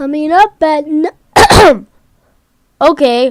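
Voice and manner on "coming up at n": voice suddenly cracks, cut off sharply at "n-". Counting down a tank list, announcing the next entry: voice crack. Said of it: "huge voice crack right there".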